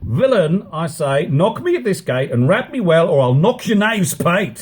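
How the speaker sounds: high, quarrelsome, threatening tone. A master orders his servant to knock at the gate, quarrelsome. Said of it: "Oh, my master is grown quarrelsome. / Oh, my master is grown quarrelsome".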